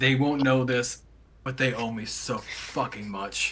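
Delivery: very slow, drawn-out grumble, muttered under the breath. Muttering in character while handing over items: muttering under breath. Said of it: "I just mutter under my breath".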